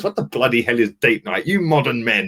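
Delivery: put-on la-di-da posh upper-class voice. Retelling how Claude answered him, imitating Claude's posh voice. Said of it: "They put on a posh voice".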